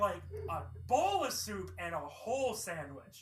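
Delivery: bowl stressed and drawn out slowly.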